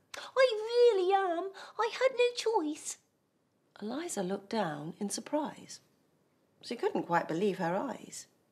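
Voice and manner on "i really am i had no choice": very high, small, tiny apologetic voice. Narrator reading the thief answering the one who shouted, in a small little voice. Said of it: "came a little voice".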